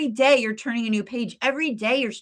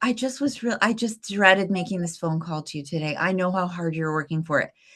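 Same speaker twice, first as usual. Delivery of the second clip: mock theatrical drama, every word milked, overdone sympathy; 5 semitones lower than usual. Retelling a phone call from her leader: imitating a dramatic leader. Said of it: "she was so dramatic".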